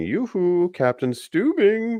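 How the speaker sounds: yelled out very high. Recapping a show's last scene, a character calls to the captain, yelling in Scarecrow voice. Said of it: "and he's yelling".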